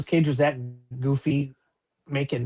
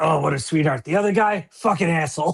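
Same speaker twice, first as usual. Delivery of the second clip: raspy, smoky voice, rasped out; 2 semitones higher than usual. Retelling an autograph signing: raspy Kathleen Turner voice. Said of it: "she's got that raspy smoke voice".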